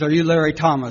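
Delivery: put-on Scottish accent, male voice. Retelling what a scottish man said at the jail door: imitating a scottish man. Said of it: "a Scottish man with a patch".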